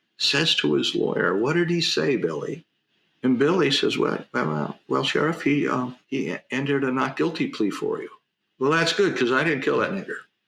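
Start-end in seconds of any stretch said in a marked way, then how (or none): none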